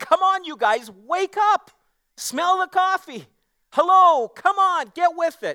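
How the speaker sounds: very high, drawn-out, impassioned pleading tone. Retelling how a man pleaded with his listeners, imitating someone pleading. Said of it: "He's pleading with them".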